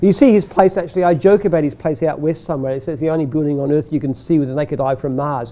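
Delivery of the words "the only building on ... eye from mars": plain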